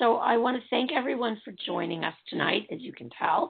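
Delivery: raspy, gravel-worn voice, slightly high. A host thanks everyone for joining tonight, in a gravelly voice. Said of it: "My voice is getting gravelier and gravelier".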